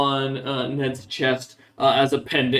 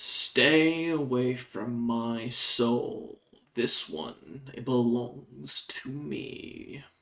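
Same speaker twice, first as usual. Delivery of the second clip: hissing, serpent-like voice of raging fire; 8 dB quieter than usual. Voicing a voice heard in the mind: serpent-like raging inferno voice. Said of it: "almost serpent-like sounding voice of a raging inferno".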